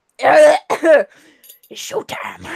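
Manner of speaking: rasping voice, as rough as possible. Trying out a quote from him, a raspy Beetlejuice impression. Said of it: "I can barely do like a raspy voice".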